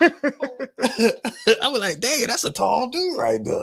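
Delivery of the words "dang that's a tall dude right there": put-on very high, swooping old man voice. Retelling own words about a tall celebrity: like an old man at a barbecue. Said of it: "you sound like an old man at a barbecue".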